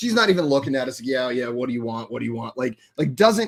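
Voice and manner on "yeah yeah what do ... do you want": flat, bored, couldn't-care-less indifference. Retelling how a waitress took the order: imitating an uncaring waitress. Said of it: "couldn't care less".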